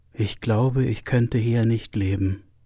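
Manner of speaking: softly spoken. Narrator reads a visiting Turkish philosopher looking at a Berlin street; said quietly. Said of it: "sagte leise".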